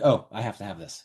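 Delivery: ordinary talk, nothing marked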